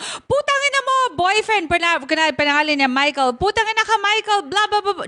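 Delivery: put-on, high, furious swearing. Explaining they don't mean literal rage, the speaker demos cursing out a boyfriend: mock-angry cursing. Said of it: "dapat magalit ka as in tipong".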